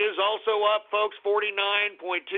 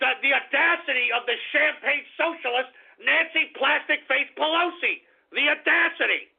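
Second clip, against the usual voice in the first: angry, pissed-off rant, pitched higher; 6 semitones higher, 3 dB louder than usual. Ranting about a politician calling bonuses crumbs: angry. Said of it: "I'm pissed off".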